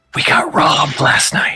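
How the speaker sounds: secretive, hushed, conspiratorial whisper. A game narrator's character leans in to confess to the party, in a conspiratorial whisper. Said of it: "she leans in a conspiratorial whisper".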